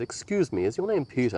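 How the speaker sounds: put-on posh, refined accent. Retelling a stranger approaching him at a screening: put-on posh accent. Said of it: "a posh accent".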